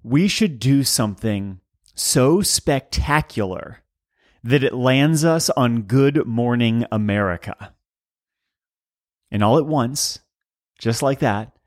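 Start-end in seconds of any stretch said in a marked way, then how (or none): none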